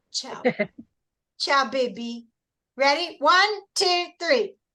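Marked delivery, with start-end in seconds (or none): 0.1-2.2 put-on Brazilian accent on "ciao". Host ending the night, showing the goodbye in a Brazilian accent. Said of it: "we have to say it with a Brazilian accent".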